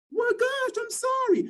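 very high, drawn-out put-on woman's voice. Imitating a partner refusing an apology: put-on female voice. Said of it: "The voice".

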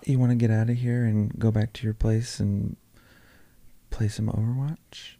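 pretend whisper. Acting out what a girl might whisper in an ear: pretend whisper into the mic. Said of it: "Whispering into the mic".

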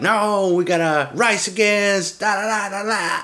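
put-on mixed Australian-Jamaican accent. Describing a guy trying to rally people, the speaker imitates his Australian Jamaican accent. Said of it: "Like a Australian Jamaican accent".

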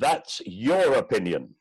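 very loud, theatrical, actory stage declamation. Answering back every time people say it, in a very loud, actory voice. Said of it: "I say in a very loud, actory voice".

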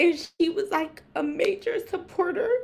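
crying through grateful tears. Thanking Jazz while grieving the loss of an aunt, crying. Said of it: "I'm crying because I'm grateful".

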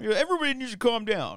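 very high, very loud, shrill, booming caricature voice. Teasing another speaker about liking movies: Cody impression. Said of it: "Is that your Cody impression?".

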